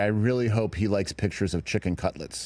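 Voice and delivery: ordinary talk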